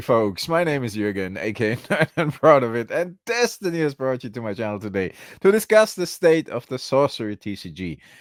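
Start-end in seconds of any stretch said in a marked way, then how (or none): 1.4-2.9 laughing through words, higher. Introducing the channel after several failed intros, laughing while talking. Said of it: "I'm sorry for laughing".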